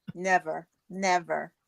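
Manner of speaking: ironic, tongue-in-cheek, sarcastic delivery. Answering whether they have dealt with toxic relationships: sarcastic denial. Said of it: "I'm being sarcastic".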